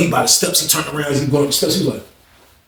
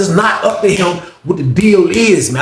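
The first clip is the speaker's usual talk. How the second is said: ordinary talk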